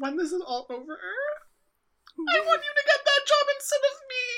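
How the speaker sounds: crying, tearful, very high pitch, voice breaking. Telling the other person they should get the job instead, the speaker is crying. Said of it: "sorry, I'm crying".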